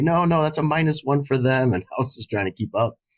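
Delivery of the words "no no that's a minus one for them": high-pitched, corrective-sounding yell. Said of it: "Kim Adolphs would yell at me".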